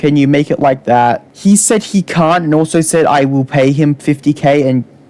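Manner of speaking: ordinary talk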